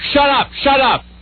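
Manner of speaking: put-on very high holler, high-pitched, said twice. Retelling yelling at his wife while on a phone call, retelling a yell. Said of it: "why are you yelling at me?".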